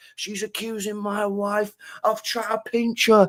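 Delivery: put-on, very high, outraged, fuming voice. Retelling what an angry husband said: imitating a fuming man. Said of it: "he's fucking fuming".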